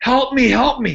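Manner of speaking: mock very high, shrill scream. Telling how a man came running after the mob of gangsters, imitating someone screaming for help. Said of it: "screaming like a bitch".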